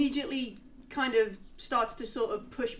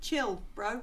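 ordinary talk, nothing marked

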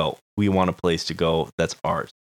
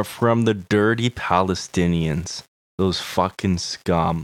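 normal talking voice

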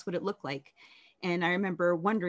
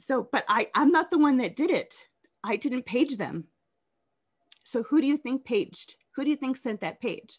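emotional, moved voice, pitched up; 6 semitones higher, 4 dB louder than usual. Speaker recalling a past emergency page; getting emotional. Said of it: "I'm gonna get emotional".

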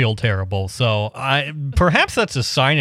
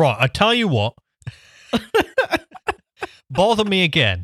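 high, swooping Wigan accent; 7 semitones higher than usual. Picturing calling up the phone's voice assistant: Siri with a Wigan accent. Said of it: "the voice assistant is gonna have a Wigan accent".

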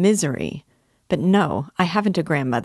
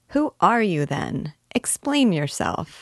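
plain

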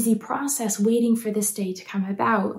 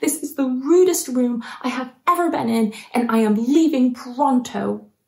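acted, outraged, angry child voice. Retelling how Maddie reacted when refused her present: imitating Maddie's angry outburst. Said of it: "she got so angry with us and she declared".

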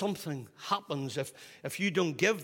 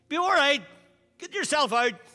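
very loud high-pitched shout; 11 semitones higher, 8 dB louder than usual. Telling a story about a dad calling through the patio door, retelling a dad's shout. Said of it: "he shouts out through the patio door".

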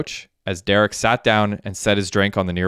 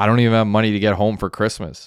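usual speaking voice

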